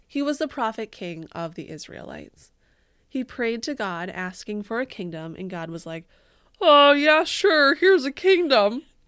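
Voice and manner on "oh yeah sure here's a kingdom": very loud, pitched-up, laid-back, offhand delivery. Retelling God's reply to a king's prayer, in a God voice. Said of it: "Is that God's voice?".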